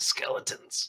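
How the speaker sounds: muttered under breath. Voicing a badly wounded woman pointing at ruins: under her breath. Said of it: "under her breath, she says".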